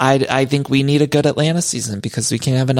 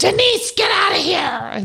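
put-on very high, ragged, rasping, drawn-out yell. Recalling a show's producer losing it at denise, imitating a producer yelling. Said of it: "That man just yelling at Denise".

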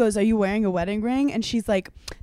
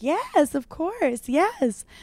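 lilting, very slow, high, swooping, drawn-out voice; 7 semitones higher than usual. Retelling how a woman answered a stranger: imitating a higher-pitched voice. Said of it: "her voice gets into, like, higher register".

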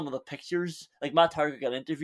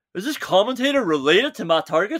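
loud, high, heckling shouted jibe; 6 semitones higher, 5 dB louder than usual. Repeating what the other speaker shouted at the TV: deeper voice impersonating the other speaker. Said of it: "Had to do a deeper voice there as well".

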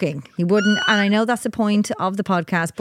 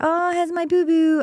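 high, cooing, affectionate voice; 9 semitones higher than usual. Retelling how her partner greets their daughter: imitating her partner cooing a pet name. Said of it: "And he's like".

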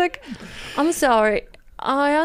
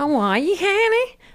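put-on Northern Irish accent; 5 semitones higher than usual. Asked to do a Northern Ireland accent, greeting someone in a Northern Irish accent. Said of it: "do Northern Ireland accent".

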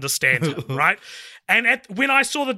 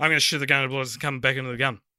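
indistinct mumbled words, hard to make out; 5 semitones lower, 4 dB quieter than usual. Imitating how he says a line in the film, mumbled, hard to make out. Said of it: "He doesn't say it like that. He goes".

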